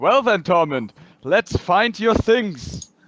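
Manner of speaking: shrill, high-pitched, very loud calling out. A player's character urges a companion to go find his things: very loud. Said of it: "Sari says very loudly".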